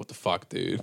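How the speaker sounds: play-acted, fuming, exasperated angry whisper. Retelling a teammate's bad play: retelling an angry outburst. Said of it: "I'm still, like, angry".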